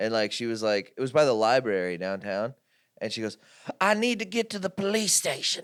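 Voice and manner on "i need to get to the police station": high-pitched woman's voice. Retelling what a woman with a shopping cart downtown said to the speaker, imitating a woman. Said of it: "She talked to me like this".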